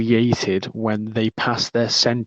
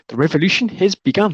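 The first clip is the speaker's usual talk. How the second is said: robot voice, pitched up high; 8 semitones higher, 3 dB louder than usual. Quoting a favourite movie moment, in Korg's robot voice. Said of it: "Fucking robot voice".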